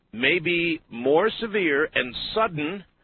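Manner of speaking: word sudden slowed and leaned on hard.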